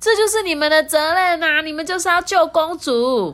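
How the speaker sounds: very high, shrill, insistent shout. Reading a story aloud, the princess insists on being rescued: shouting. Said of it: "公主就大叫说".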